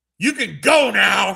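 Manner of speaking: mock yell, very slow, rough, loud, drawn out. Retelling how a man on a train yelled at everyone, imitating someone yelling. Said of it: "He's like yelling at the whole".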